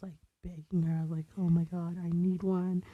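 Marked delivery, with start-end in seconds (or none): none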